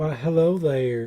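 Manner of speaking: fake Western drawl accent. Asked to do an accent for the drag queens, trying a Western twang accent. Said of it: "me to do ac-".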